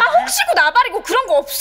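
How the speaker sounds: exasperated, loud yelling. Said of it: "걸핏하면 소리를 빽빽 지르고 난리야".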